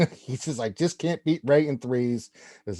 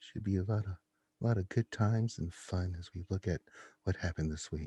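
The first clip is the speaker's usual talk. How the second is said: very quiet, low, even, hushed radio voice; 5 semitones lower, 11 dB quieter than usual. Recapping Mister Jigabachi's week on the show, in a soft NPR voice. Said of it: "we're going to use the soft voice".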